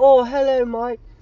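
high, nice, polite tone. Imitating how a woman actually sounds greeting him, in a Mary Poppins voice. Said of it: "Sounds like Mary Poppins".

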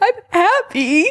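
put-on very high voice, words through sobs. Retelling answering a woman who offered comfort, imitating sobbing. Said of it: "And I was like sobbing".

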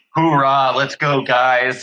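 play-acted, very slow, bright, upbeat, drawn-out delivery. Retelling a coach announcing treadmill punishment at practice: imitating coach's upbeat tone. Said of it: "the most upbeat tone".

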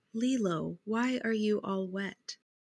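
very tender, soft, slow, gently curious voice. Describing a film scene, quoting the dance instructor asking Lilo, imitating a tender voice. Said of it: "in the tenderest voice".

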